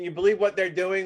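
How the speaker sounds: normal talking voice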